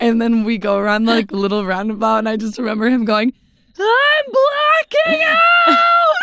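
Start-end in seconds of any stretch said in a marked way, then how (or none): 3.8-6.2 very high, loud, stretched-out shrieking talk. Retelling a friend's reaction during a ride, imitating the friend's scream-talking. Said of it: "he scream talks".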